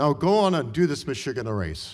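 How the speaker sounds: put-on Hungarian accent. Retelling a mentor's advice before the race: Anna Ornstein impression, Hungarian accent. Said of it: "in her Hungarian accent".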